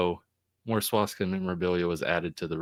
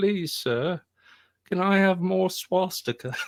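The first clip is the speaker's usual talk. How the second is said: put-on very high, pleading, begging young boy voice; 12 semitones higher than usual. Retelling someone going up to a man with his bowl out, in an Oliver Twist impression. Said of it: "Oliver Twist going up to that that bat guy".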